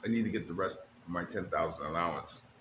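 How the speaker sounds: low, quiet muttering under the breath. Retelling what a woman said under her breath after coming back: imitating someone muttering. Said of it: "I heard her under her breath".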